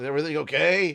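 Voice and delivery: very high, loud voice with a stuffed-up nose. Voicing Pollux, who has a bit of a cold, asking through the window: Pollux voice with a cold. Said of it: "Why does he sound like that?".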